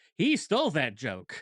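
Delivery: ordinary talk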